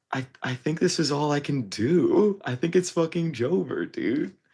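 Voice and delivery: tearful voice. Retelling what was said in a voice memo, imitating own past crying. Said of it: "crying on the voice memo".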